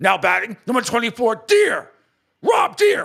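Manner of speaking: very high, loud, angry announcer-style yell. Recalling how PA announcer Bob Betts introduced batters, angry yelling Bob Betts impression. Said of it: "He'd just yell it at you".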